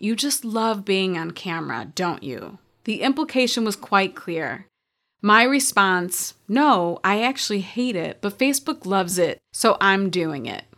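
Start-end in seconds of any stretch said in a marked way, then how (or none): 0.0-2.6 mock snide, snarky, judgmental tone. Retelling a remark someone once made to her, in a mock snarky, judgy tone. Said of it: "in a snarky, judgy tone".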